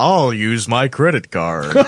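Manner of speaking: put-on announcer voice. Joking about how to talk to police, speaker quotes a cartoon bit: South Park announcer impression.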